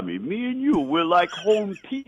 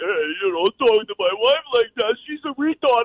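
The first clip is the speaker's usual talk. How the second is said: put-on Italian tough-guy voice, pitched up; 5 semitones higher than usual. Retelling Rocky's reply to Mr. T: realistic Rocky impression. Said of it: "I'm doing the realistic Rocky".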